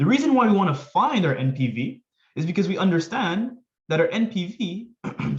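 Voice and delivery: voice breaking mid-sentence, cracking up high. Explaining why to find the NPV of two projects, voice crack. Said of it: "sorry about that with my voice crack".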